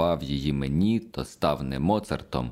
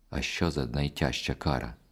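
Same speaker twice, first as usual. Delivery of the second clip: plain reading voice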